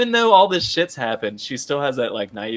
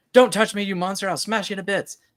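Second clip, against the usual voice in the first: very high scream, acted out; 9 semitones higher than usual. Retelling a character's line from a scene: imitating a scream. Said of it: "she screams and she's like".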